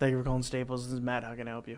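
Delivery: deep rushed phone voice. Showing how he answers calls at work: deeper, quick phone voice. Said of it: "I just make my voice deeper. ... Like as quick as possible, deep voice".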